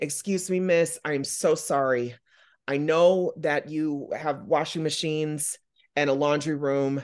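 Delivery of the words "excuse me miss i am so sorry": mock-angelic, put-on angelic tone. Retelling going up to her to ask a favor, imitating an angelic tone. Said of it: "with the most angelic face and tone".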